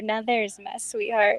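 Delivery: soft, hushed half-whisper. Game master voices a character gazing at another character: soft half-whisper. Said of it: "hear her softly whisper".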